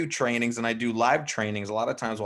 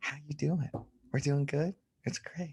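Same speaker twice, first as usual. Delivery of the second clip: soft, gentle, eased-off delivery; 4 semitones higher, 6 dB quieter than usual. Demonstrating how to talk to yellows, talking a little softer. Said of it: "I'm talking a little softer to my yellows".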